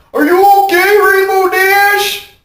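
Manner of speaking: very high, silly, exaggerated stupid voice, one word stretched. Recalling a scene, quoting a character's line in an exaggerated stupid voice. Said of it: "and the stupid voice there".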